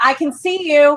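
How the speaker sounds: projected, carrying call-out. Player's character, using thaumaturgy, calls out to those hiding: very loud projected voice. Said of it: "make my voice project very, very loud".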